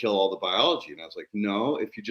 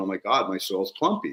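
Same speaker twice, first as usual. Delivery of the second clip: mock alarmed, panicked, freaked-out, worried outburst. Retelling how he called the speaker, imitating someone freaking out. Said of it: "he called me freaking out".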